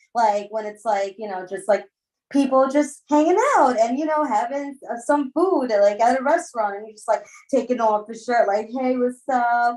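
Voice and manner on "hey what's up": mock conceited, cocky, show-off look-at-me tone. Retelling an ex taking off his shirt: imitating a conceited greeting.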